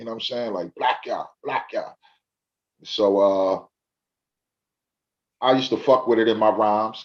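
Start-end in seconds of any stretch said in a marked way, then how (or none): 0.5-1.9 put-on Jamaican accent, much slower. Retelling how big bro said the name, imitating his Jamaican accent. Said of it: "with his little Jamaican accent".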